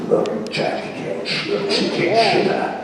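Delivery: put-on rough elderly English voice.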